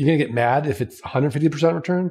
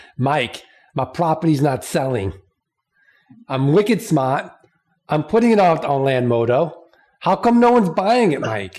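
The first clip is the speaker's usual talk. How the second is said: put-on Boston accent. Host imitating a client complaining to Mike on a coaching call, Boston accent. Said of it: "I'll just do it in a Boston accent".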